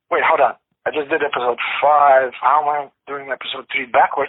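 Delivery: ordinary talk, nothing marked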